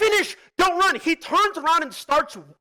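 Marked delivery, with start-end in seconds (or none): 0.0-1.0 mock urgent yell, high-pitched. Retelling a game fight to another speaker: retelling own yell. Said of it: "I'm yelling".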